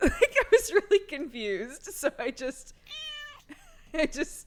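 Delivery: loud, high laughing through words. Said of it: "I'm laughing because".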